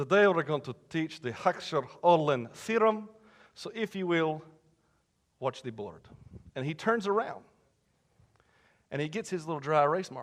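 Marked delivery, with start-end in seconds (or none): 0.0-6.0 clumsy, bad, put-on Russian accent. Retelling a teacher opening a finance class: bad Russian accent. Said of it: "bad Russian accents".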